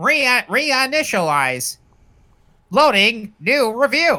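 navigation announcer voice. Playing a GPS that reviews movies, rebooting mid-review, in robotic GPS voice. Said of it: "this is like if a GPS reviewed movies".

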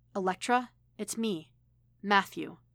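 ordinary delivery, nothing marked

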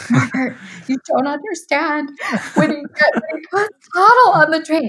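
play-acted weepy, very high, tearful voice. Retelling what they said to Norbert back then: retelling own crying. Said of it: "and I'm cry-, like, for real crying".

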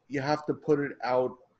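ordinary delivery

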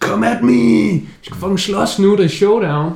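mock yelling, high-pitched and shouted. Retelling how she yelled a challenge to fight, retelling a shouted challenge. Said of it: "råber bare fucking".

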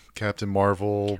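plain

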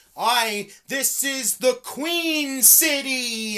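canned robotic automated voice, very slow and high. Mocking how a wrestler always talks: Charlotte's automated voice. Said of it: "her fucking automated voice every time".

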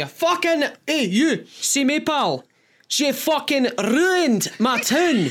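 put-on drunk Scottish voice. Retelling what a drunk lodger always said: imitating a drunk Scottish lodger. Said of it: "he'd always say the same thing".

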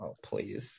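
mock hushed, tearful, crying whisper. Retelling a close-up film scene on a beach: imitating Jane Fonda crying. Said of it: "a close-up of her crying, like".

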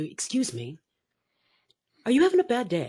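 radio announcer's on-air speaking tone. Speaker showing how they approach someone having a bad day, quiet radio voice. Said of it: "I come up very quietly, and I use my radio voice".

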